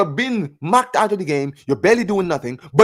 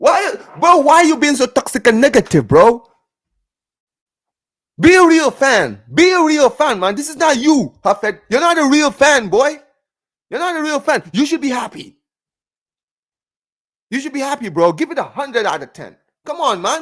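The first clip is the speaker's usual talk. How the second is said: high, sarcastic, scolding rant; 6 semitones higher than usual. Mock-scolding another speaker for rating the match seven out of ten: put-on sarcastic scolding. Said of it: "I'm being hella sarcastic".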